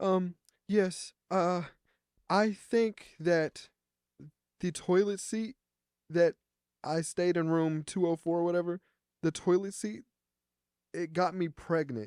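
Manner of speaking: weepy, sobbing, tearful crying speech. Retelling what a crying woman told the speaker, imitating a woman crying. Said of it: "she's like crying".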